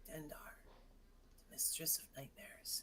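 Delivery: breathy, hushed whisper, very close. Speaker voicing a hovering figure who puts his mouth next to your ear, whisper. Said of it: "he whispers at you".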